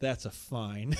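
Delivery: acted flat deadpan delivery. Retelling a wrestling segment, quoting Nicholas Jackson: imitating Nicholas Jackson's deadpan. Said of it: "I love how deadpan he s-, always says that".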